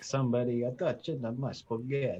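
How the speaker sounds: put-on mimicked Italian-accented text-to-speech woman's voice. Retelling messages sent to a stream's reading voice: imitating an Italian-accented text-to-speech woman. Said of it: "a woman with an Italian accent".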